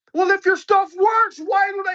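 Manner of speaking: put-on very high, loud, childish little-kid voice. Imitating critics who question whether the method works: imitating critics like little kids. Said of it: "sound like little, little ass kids".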